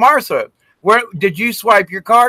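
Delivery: mock high calling out across a distance. Retelling calling out to Martha after leaving the store, retelling a yell across a lot. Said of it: "I'm yelling across the parking lot".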